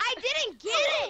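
yelling loudly. Reacting to missing a shot in a game: screaming. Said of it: "stop screaming".

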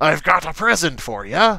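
put-on pirate-style accent throughout. Pitching a Christmas voice line for Torbjörn placing a turret: Torbjörn line in pirate accent. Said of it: "that's more of like a pirate accent".

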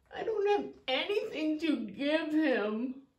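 downcast, glum little bear cub puppet voice. Voicing a puppet bear asked why he is so sad: sad puppet character. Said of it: "why are you so sad".

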